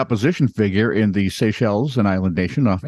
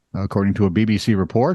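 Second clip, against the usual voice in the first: ordinary talk, nothing marked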